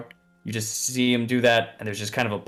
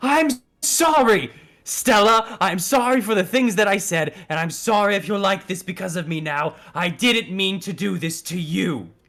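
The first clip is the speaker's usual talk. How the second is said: flustered, pitched-up voice, sucking in air between phrases; 8 semitones higher than usual. Voicing a flustered character's apology, sucking in air while apologizing. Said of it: "sucking in air as he just says".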